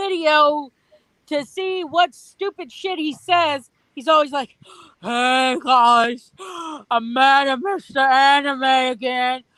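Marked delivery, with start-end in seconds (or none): 5.0-9.4 mock breathless voice, louder and slower. Mocking how a video maker always opens his videos, in a mocking out-of-breath voice. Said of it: "you can't speak without being out of breath".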